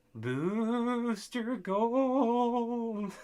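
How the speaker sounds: very high, spooky ghostly call, Gold drawn out. Pointing out how someone calls him, name said in spooky voice. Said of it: "you call him in a spooky voice".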